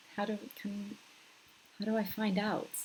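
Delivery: muttering under breath. Checking whether the sound works on a call, the speaker is muttering to self.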